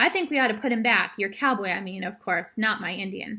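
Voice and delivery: ordinary delivery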